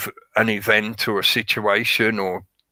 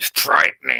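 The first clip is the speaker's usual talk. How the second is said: rough, creaky, eerie horror-film vampire rasp; 6 semitones lower than usual. Imitating how a man in a speech says the word frightening. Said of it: "it's just the way he says "frightening,"".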